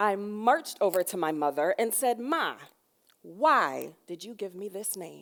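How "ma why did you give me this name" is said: put-on eight-year-old child's righteous, indignant voice. Retelling marching over to mother at about eight, imitating indignant child self. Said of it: "in all of my probably eight year old indignity".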